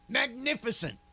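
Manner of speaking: New York accent, pushed thicker and further. Trying again with more New York in it: Marv Albert voice with more New York. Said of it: "Get a little more New York in it".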